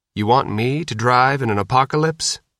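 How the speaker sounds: plain reading voice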